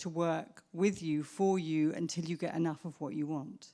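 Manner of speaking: ordinary talk, nothing marked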